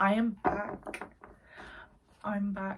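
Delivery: put-on grand, upper-crust posh accent. Vlogger greeting viewers on returning to the channel, in a posh voice. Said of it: "I don't know why I did a posh voice".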